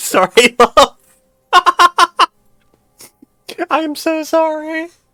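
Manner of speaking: giggling through it, very high and very slow. Apologizing to another speaker after startling them: laughing while talking. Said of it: "I'm laughing 'cause my model derped".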